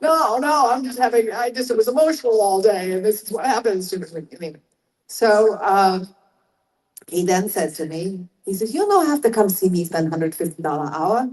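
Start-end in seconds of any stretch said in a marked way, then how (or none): 8.7-11.3 fast, put-on, Hawaii-raised accent.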